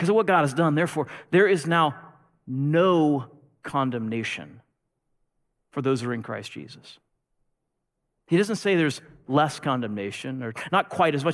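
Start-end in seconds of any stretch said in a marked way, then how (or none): 0.0-7.0 slow, deliberate delivery, "no" stressed and drawn out. Repeating a verse to listeners a second time, slower. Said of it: "Let me say it again slower".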